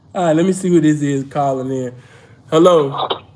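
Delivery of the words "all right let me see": plain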